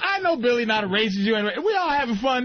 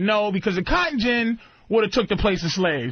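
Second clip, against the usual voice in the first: ordinary talk, nothing marked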